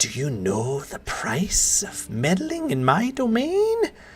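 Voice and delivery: put-on slow, swooping voice of an old elf woman. Voicing an old elven woman who confronts trespassers: old elven woman's voice. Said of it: "she's like".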